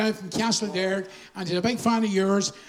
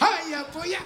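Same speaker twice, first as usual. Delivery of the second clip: high, put-on Cork accent; 7 semitones higher than usual. Recalling coming back from early music days in Cork, in a Cork accent. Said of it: "I came back with a Cork accent".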